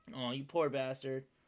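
plain

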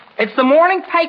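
far too loud, high-pitched voice. Bringing the morning paper to a friend, speaking loudly. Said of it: "Not so loud".

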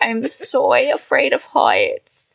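put-on high, swooping, creaky, scared baby voice. Retelling how a man acted on a Ferris wheel, imitating a babyish man. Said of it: "acting like a little fucking bitch baby".

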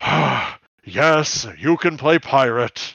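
weary sigh, then slow delivery. Imagining a leader granting a request: sighing Megatron impression. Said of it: "And then Megatron sighs and goes".

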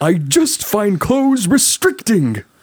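very high cartoon voice with swooping pitch. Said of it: "hoping that my Tigger voice would be strong enough".

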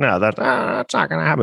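put-on creaky, rough, raspy old film star voice. Answering a made-up question as an old actor: Jimmy Stewart voice. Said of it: "That's my Jimmy Stewart impression".

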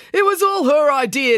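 hysterical. Brad, just handcuffed and pulled out by Constable Pike: hysterical. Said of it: "declared Brad hysterically".

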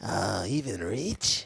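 slow, creepy character voice. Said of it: "You sound like fucking Gollum".

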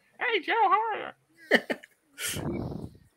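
very high-pitched, very slow, squeaky little toy-figure voice. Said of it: "little Recondo and you just hear my voice behind it going".

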